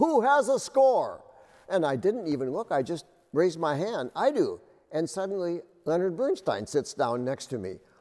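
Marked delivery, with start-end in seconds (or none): 0.0-1.2 very high, called-out, shouted yell. Recounting a rehearsal where a voice in the aisle calls out, retelling a yell. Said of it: "this voice in the aisle yells out".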